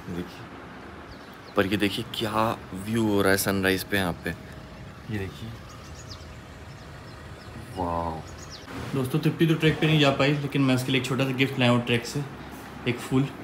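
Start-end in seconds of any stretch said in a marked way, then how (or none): 0.1-8.2 soft, low, hushed voice. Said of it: "धीरे धीरे बोल रहा हूँ".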